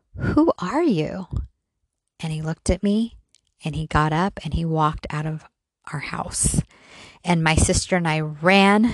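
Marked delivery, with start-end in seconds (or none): 0.2-1.3 put-on small voice of an eleven-year-old. Retelling waking as a child to a stranger on the bed: little eleven-year-old voice. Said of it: "in my little sixth grade, 11 year old voice".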